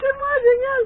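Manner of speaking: very high, delighted squeal.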